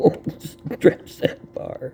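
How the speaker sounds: high, slow laughing. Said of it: "I'm laughing".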